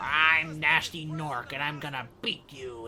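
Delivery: put-on, loud, very drawn-out nasal voice. Recalling his voice in A Hero's Tale: nasal Nasty Norc voice. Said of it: "he had this like nasally".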